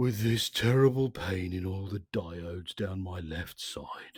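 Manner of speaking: quiet, soft, low, sunken lamenting voice. Reading a story, a character complains to a roaring machine: soft, low voice. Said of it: "said Marvin in a soft, low voice".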